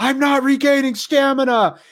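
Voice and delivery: shrill, very high-pitched yelled outburst. Retelling a game moment of running out of stamina: imitating own scream. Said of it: "you hear me scream".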